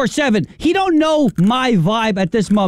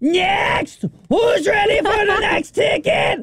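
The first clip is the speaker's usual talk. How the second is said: put-on, hyped-up, overexcited, very high ticket caller voice; 11 semitones higher than usual. Describing a dude at the Regal Westbury, imitating an overexcited ticket guy. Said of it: "Sir, you need to calm down".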